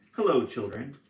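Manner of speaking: sugary sweet voice. Reading a story aloud, someone in the hall greets the children: sweet voice. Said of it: "someone said in a sweet voice".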